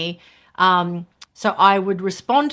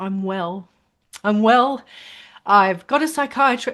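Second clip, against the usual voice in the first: voice welling up with tears, close to crying. Quoting a message from someone they helped, months later: teary. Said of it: "Oh, I'm so teary".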